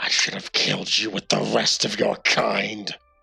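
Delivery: put-on demonic voice. In a tabletop game, a demonic voice speaks from a character's mouth: demonic voice. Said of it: "You hear a demonic voice come out of him".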